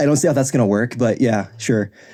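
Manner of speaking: ordinary delivery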